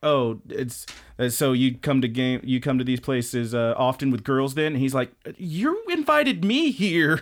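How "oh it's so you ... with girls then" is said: ordinary talk, nothing marked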